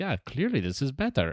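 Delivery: Estonian-accented delivery. Imitating Estonian officials replying to an email: Estonian accent. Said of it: "my Estonian accent".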